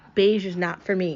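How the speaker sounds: ordinary delivery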